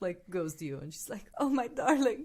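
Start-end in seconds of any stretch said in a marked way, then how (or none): 1.4-2.2 very loud, high, tearful weeping outburst. Voicing a character moved to tears by a sad story: tearful, crying voice.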